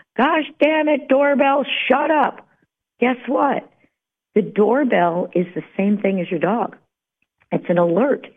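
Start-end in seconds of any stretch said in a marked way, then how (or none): 0.2-2.5 mock sudden yelled outburst, high-pitched. Acting out yelling at a ringing doorbell: imitating someone yelling at a doorbell. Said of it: "Do you yell at your doorbell".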